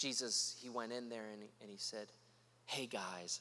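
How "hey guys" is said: put-on soft-spoken tone, lower and quieter. Retelling a mock version of a scene at the temple: imitating a very soft voice. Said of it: "very, very softly".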